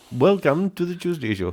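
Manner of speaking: attempted Indian accent. A co-host calls out an accent and the speaker tries it: attempting an Indian accent.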